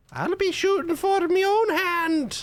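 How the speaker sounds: Scottish accent, pitched very high. Speaker tries out how a character sounds: Merida voice. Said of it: "That's what Merida sounds like".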